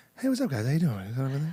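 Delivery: insecure, unsure movie-star voice. Showing an impression once done in a stand-up set: Wahlberg impression. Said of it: "I used to do Wahlberg in my set".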